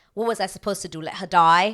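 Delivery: put-on English accent. Imitating the actor's line in the scene, with an English accent. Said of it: "English accent".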